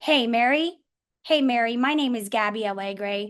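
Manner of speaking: plain, businesslike, matter-of-fact tone. Demonstrating the opening of a mortgage call in a matter-of-fact tone. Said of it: "your matter of fact, ... That's the tone".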